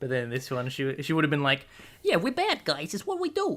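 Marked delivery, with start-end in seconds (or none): 2.0-3.6 put-on very high, swooping New York Italian accent. Speaker demonstrates how a film character might have said this: new york italian accent. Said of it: "New York Italian".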